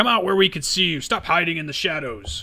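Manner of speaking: rough, gruff, growling dwarf voice. Game narrator voicing a dwarf who calls out to the players; growling dwarf voice. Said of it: "the dwarf kind of growls".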